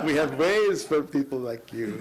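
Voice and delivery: put-on, war-film style German accent. Retelling a man's remark to him, deep german accent. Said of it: "He said in a deep German accent".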